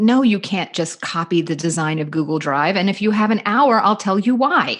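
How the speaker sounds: put-on fed-up, worn-thin, exasperated, frustrated voice. Retelling an old argument about copying designs: retelling an argument with frustration. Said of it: "hearing a certain amount of frustration in my voice".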